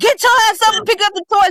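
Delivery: mock yelling. After asking politely three times, a parent acts out yelling at the kid, retelling a yell. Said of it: "I start yelling and cussing".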